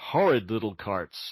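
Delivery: ordinary delivery, nothing marked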